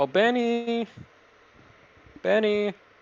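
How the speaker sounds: very high-pitched calling out. A game master voices Carrie calling up to Benny, who is sleeping upstairs, Carrie calling out. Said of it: "Carrie call out to you".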